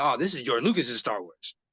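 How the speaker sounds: ordinary talk, nothing marked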